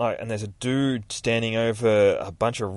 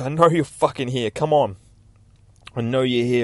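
frantic, out-of-control screaming; 4 dB louder than usual. Telling a story about a man losing his temper, retelling his scream. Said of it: "screaming like".

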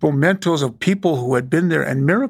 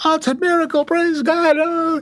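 put-on very high, frenzied, hysterical ranting and raving; 13 semitones higher than usual. Speaker retells jumping around while a man yelled to settle down, retelling own hysterical raving. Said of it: "I was just ranting and raving".

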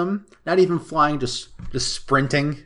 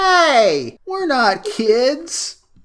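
acted very high, loud whine, "hey" drawn out; 12 semitones higher, 5 dB louder than usual. Recapping a scene where Velma confronts Ben: imitating Fred's whiny voice. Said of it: "Fred says that in like the whiniest voice".

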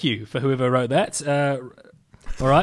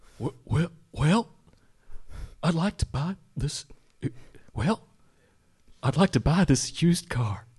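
hemming and hawing; 5 dB quieter than usual. Doing Ronald Reagan buying a used car: Ronald Reagan voice. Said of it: "This is Ronald Reagan buying a used car".

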